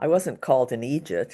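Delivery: ordinary delivery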